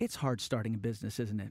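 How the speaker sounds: put-on hushed voice. Recalling a pitch meeting, the speaker quotes Ira Glass speaking quietly. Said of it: "Ira just kind of quietly goes".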